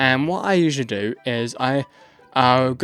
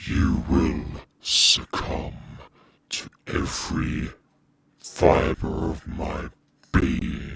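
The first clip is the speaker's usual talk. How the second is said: processed demonic voice effect; 10 semitones lower, 5 dB quieter than usual. In a tutorial on making demonic voices, playing the result: demonic voice. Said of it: "That is how you do demonic voices".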